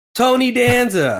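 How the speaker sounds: sudden panicked blurt, very high pitched. Telling how they yelled out during a comedian's punchline, retelling a yell. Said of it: "And I yell".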